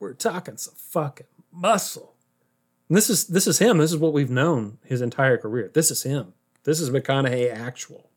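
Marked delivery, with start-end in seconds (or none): 0.0-2.1 little chuckle running through the words. Describing Matthew McConaughey's real manner: Matthew McConaughey with his little laugh. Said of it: "This is McConaughey with his little laugh".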